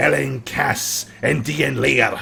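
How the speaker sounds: rough, growly masculine voice. Narrating Galen suddenly yelling, way louder than anyone has spoken, Galen's loud manly growly yell. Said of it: "almost like a manly kind of growly voice".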